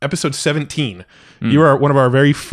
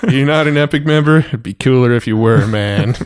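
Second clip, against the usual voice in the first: bad put-on laid-back drawl. Teasing a listener about not being a member: bad Matthew McConaughey impression. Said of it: "my really bad Matthew McConaughey impression".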